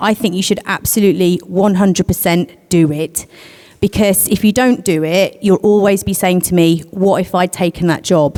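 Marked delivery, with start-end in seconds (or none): none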